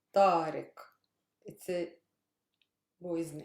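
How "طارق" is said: stress on first syllable ta of طارق. Pronouncing a boy's name for learners: first-syllable stress on ta. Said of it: "Stress is on ta".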